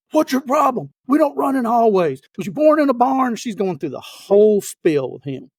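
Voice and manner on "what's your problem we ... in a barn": play-acted, pitched-up drill-sergeant yelling. Retelling how a female drill sergeant cornered a man in a hallway, retelling a drill sergeant's yell. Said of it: "commences to yelling at him".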